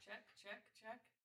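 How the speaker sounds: very high, hushed, soft delivery. Testing a mic after being asked for a loud noise: loud mic check. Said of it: "Make a loud noise".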